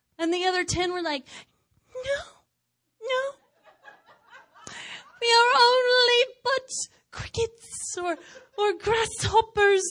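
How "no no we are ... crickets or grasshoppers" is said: loud, high, put-on British accent. Retelling what the other ten said when they came back, in a british accent. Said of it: "my British accent".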